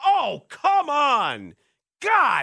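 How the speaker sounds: put-on very high, very loud, drawn-out, shrill exasperated yell. Describing a woman swearing through a bike workout, retelling exasperated swearing. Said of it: "she is swearing".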